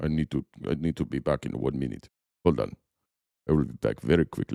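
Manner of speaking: put-on very low, deep, heavy Russian accent. Trump excusing himself from a meeting with President Xi, deep Russian voice. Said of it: "I can do deep voice Russian".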